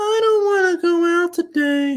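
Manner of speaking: put-on high childlike young girl voice. Mocking an audiobook narrator's voice for young girls: imitating Mark Thompson's nine-year-old girl voice. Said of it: "when he uses their voice, he's like".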